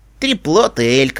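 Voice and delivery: with a sigh. Narrator reads a woman answering another's mock growl, sighing. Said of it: "вздохнула Келли".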